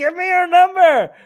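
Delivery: high, shrill, loud booming yell, pitched way up. Translating a clip where he yells at her: imitating someone yelling. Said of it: "He's yelling at her".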